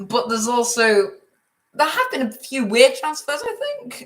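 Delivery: voice breaking partway through. Speaker talking about weird transfers, voice cracking. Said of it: "that was a voice crack".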